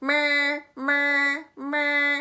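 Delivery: big, bold, very loud booming voice. Demonstrating the bold b sound to the listener: big, loud voice. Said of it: "like a big, loud bus".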